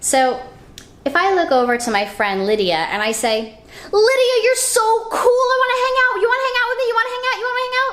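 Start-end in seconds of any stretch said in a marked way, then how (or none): 3.9-7.9 shrill, very high yell rattled off fast. Showing how saying something nice to friend lydia lands: raised voice. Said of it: "And I raise my voice".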